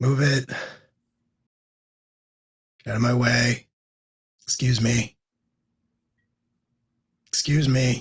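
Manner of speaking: bored, mechanical robotic monotone drone. A game narrator voices a creature pushing through a crowd, in a bored, robotic voice. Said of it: "in a very sort of bored, robotic voice".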